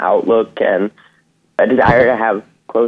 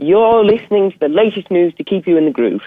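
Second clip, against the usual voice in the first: made-up posh upper-class British accent, pitched up; 8 semitones higher than usual. Actor asked by an interviewer for an example, in a classic british upper-class accent. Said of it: "riffing off of like a classic British upper class dialect".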